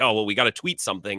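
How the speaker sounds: ordinary talk, nothing marked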